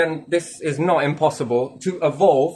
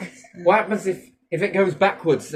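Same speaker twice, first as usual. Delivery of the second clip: ordinary talk, nothing marked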